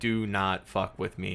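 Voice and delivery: ordinary talk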